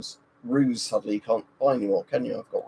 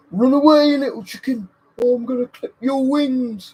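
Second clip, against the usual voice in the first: very high, loud, pitiful pig voice; 8 dB louder than usual. Talking about a favorite game and quoting a line; bad pig impression. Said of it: "not a very good pig impression".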